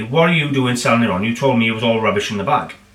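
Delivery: ordinary talk, nothing marked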